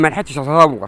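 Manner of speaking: ordinary delivery, nothing marked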